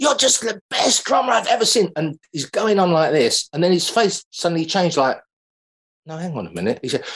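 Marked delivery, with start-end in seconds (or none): 0.0-1.9 put-on American-accented voice. Speaker retelling a man ranking drummers: put-on american accent. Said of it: "excuse my American accent now".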